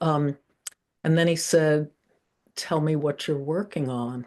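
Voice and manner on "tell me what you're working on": mild, soft, gentle way of speaking. Retelling a phone call from a man late in his life, imitating his gentle, gentle voice. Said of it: "in that gentle, gentle voice of his".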